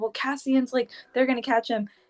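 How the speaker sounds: fast, hurried, emotional rattled-off blurt. Retelling a character's anxious report to an ally: imitating fast talking. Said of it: "she's fast talking".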